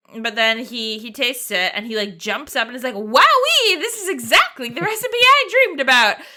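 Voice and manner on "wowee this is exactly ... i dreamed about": loud, bouncy squeaking voice. Retelling how he reacted after tasting the dish, in a Mickey Mouse voice. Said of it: "like he's Mickey Mouse or something".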